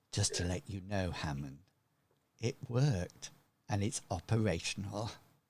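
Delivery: hushed, low half-whisper, close to the ear. Voicing a character who leans in to a listener's ear, half-whispering. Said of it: "She whispers in your ear".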